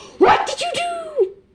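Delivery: very high, loud, slow, drawn-out cry. Imagining how Hermione says her book line: loud Hermione impression. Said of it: "I said that way too loud".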